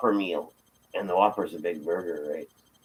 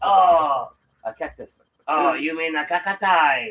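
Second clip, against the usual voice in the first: mock Chinese accent, higher pitched; 8 semitones higher than usual. Recalling a scene from a show, the speaker mimics a line in a put-on 'China voice'. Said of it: "doing the China voice".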